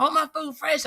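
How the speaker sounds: put-on high, demanding yell. Speaker acts out a customer yelling at her about the food; retelling a customer's yell. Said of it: "she was like yelling".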